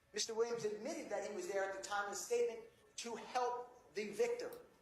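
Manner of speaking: plain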